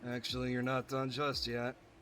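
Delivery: bored, flat monotone drone. Voicing a character as a mock-bored amusement park employee. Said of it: "a bored amusement park employee voice ... I'll go with that voice for now".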